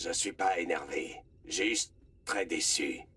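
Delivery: mock disappointed stern voice, low and slow.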